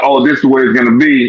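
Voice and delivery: ordinary delivery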